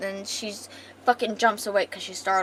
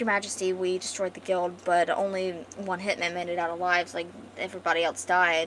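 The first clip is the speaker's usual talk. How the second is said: normal talking voice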